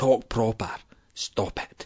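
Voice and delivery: whispered, scolding tone.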